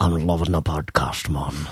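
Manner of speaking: put-on mashed-up Jamaican and Scottish accent. Echoing another speaker's line in a put-on voice: Jamaican Sean Connery voice. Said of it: "Is that a Jamaican Sean Connery?".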